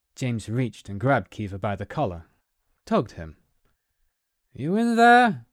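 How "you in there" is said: very loud, shrill, high-pitched, insistent yell. Narrator reads James tugging Kiva's collar when Kiva won't respond, demanding. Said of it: "James demanded".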